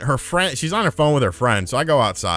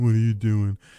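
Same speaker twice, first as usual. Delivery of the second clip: female character voice, put on; 3 semitones lower than usual. Retelling a text from a girl, in a put-on woman's voice. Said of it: "that's my voice for women".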